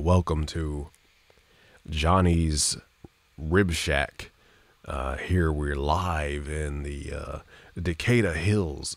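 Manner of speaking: over-boosted boomy radio voice. Explaining mic low-end boost, demonstrating how overdone settings sound: over-boosted boomy radio voice. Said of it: "it sounds like this".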